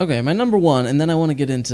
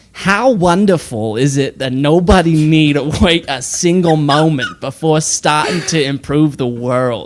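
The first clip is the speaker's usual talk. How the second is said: attempted put-on New York accent; 3 semitones higher, 7 dB louder than usual.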